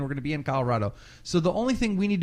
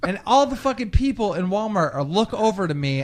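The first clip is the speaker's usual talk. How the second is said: ordinary delivery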